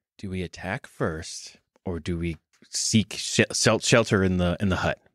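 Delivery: loud theatrical whisper. A player in a game whispering to the rest of the group. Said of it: "I'll whisper to you guys".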